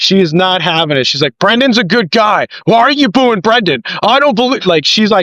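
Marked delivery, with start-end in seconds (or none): 1.4-4.6 put-on scream, higher. Retelling a daughter screaming at a man in the crowd: imitating a daughter screaming.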